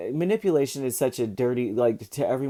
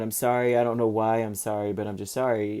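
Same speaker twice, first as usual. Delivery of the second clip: ordinary talk, nothing marked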